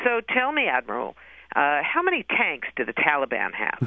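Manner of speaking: snide, snarky, sarcastic, swooping tone. Retelling a senator questioning an admiral at a hearing, mock-sarcastic senator's question. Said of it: "in this very sort of sarcastic, snarky voice".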